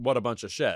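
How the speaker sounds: ordinary talk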